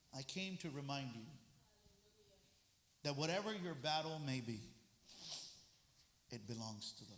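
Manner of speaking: very low, soft, tender, gentle voice. Speaking to listeners before turning to a scripture passage, gentle voice. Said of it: "But in a gentle voice".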